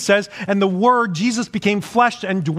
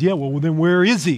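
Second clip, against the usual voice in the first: acted-out mocking tone, lower; 4 semitones lower than usual. A speaker acts out a skeptic's reply, retelling a skeptic's mockery. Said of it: "the skeptic then mockingly says".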